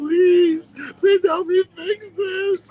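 very high, drawn-out, sobbing, hysterical crying. Act out a banned TikTok user begging a woman with millions of followers, imitating someone crying hysterically. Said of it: "It's him crying hysterically to her".

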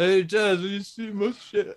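very high-pitched hollering. Imitating a roommate coming in looking for his charger: Sylvester Stallone voice. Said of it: "Why does he sound like Sylvester Stallone?".

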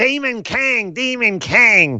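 very high, very drawn-out thin voice. Quoting a wrestler from the show: Seth Rollins impression. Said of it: "that's my Seth Rollins impression".

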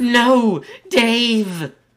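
loud, very high put-on English accent. Voicing an english character crying out as dave falls: put-on english accent. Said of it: "says the English".

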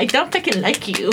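usual speaking voice

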